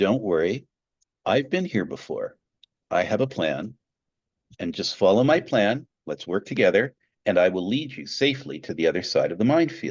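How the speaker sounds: cool, calm, low, reassuring, composed commander's voice. Telling of troops stuck in a minefield, voicing their leader: cool, calm voice. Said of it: "in a cool, calm voice".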